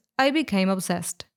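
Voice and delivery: normal talking voice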